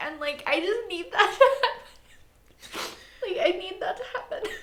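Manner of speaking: crying through the words, tearful, very high pitch. Talking about needing Iroh to get a happy ending, crying while talking. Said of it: "Are you crying?".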